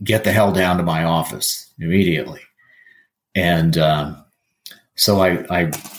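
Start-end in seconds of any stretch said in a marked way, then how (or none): none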